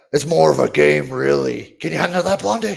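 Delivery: high, very loud, raspy, rough villain voice. Retelling how a voice actor's line would sound: Mojo Jojo voice. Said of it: "it would sound like".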